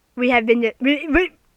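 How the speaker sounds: confused stammer with repeated restarts on "we". A confused speaker starting to explain, stuttering. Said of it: "I'm stuttering".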